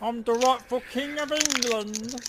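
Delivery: very high, showy, put-on English accent. In a group roleplay game, a player speaks in character in a put-on English accent. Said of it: "I'm so good at this accent".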